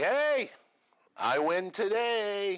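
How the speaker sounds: long, very high, drawn-out yell. Retelling calling out to her after finding a tip, retelling a yell. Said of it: "So I'm yelling at her".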